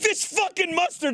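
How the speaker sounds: all-out, savage screaming, pitched very high. Retelling his dad screaming at a mustard container: imitating someone screaming.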